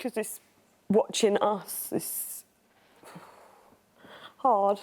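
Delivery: crying while talking, tearful voice. Explaining why watching the family footage is hard: crying while talking. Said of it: "you're watching that and you're crying already".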